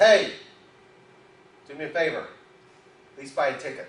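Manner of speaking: loud, big booming put-on voice. Telling about a man praying to win the lottery, the heavens answer: big booming voice. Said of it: "this big booming voice comes down and says".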